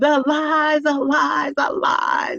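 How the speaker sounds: belted, high, dramatic TV host voice.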